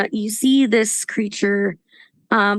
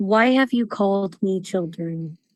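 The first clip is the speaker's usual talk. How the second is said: gentle, calm, soothing creature voice. Narrator voicing a giant serpent-like creature heard in the listeners' heads, soothing voice. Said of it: "almost in this soothing voice".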